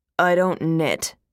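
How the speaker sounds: dry, flat, expressionless, cut off. A man cuts off a woman's passionate plea, deadpan. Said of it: "he deadpanned".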